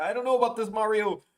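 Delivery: very high, timid, hesitant and uneasy voice. Describing someone's take on Mario and Luigi, doing the Luigi voice. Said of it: "Luigi's like".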